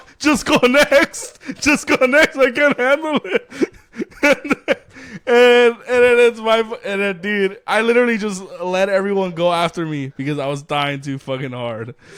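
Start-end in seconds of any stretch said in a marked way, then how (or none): 0.2-3.5 mock giggling through words, pitched very high. Retelling how he gave up his place in a line, acting out laughing while talking. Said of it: "And I can't stop laughing".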